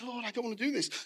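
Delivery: anguished, high, pleading outcry. Telling of a man tempted by Satan toward the bar, imitating him crying out. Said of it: "And he's crying out".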